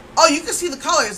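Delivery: high, fast, snippy tone.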